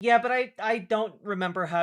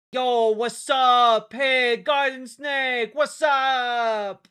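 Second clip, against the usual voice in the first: loud, high put-on Italian accent, drawn out upward; 7 semitones higher, 7 dB louder than usual. Reading a viewer's comment aloud: italian accent. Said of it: "I read your comment in an Italian accent".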